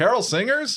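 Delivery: excited, high, loud, cheery voice.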